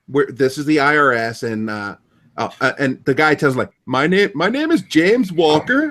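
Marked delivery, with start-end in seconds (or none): 3.9-6.0 put-on big, heavy Indian accent, higher pitch. Describing phone scammers posing as the IRS, quoting the caller in a thick Indian accent. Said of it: "Big thick Indian accent".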